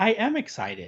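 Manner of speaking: flat, unenthused delivery with zero enthusiasm. Retelling how Kendall answers when told to be excited, imitating Kendall's flat monotone. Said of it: "Like monotone".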